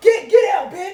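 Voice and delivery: high, loud, furious yell.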